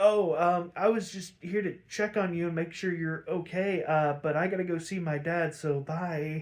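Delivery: ordinary delivery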